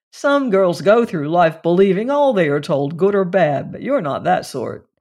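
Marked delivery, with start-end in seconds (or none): none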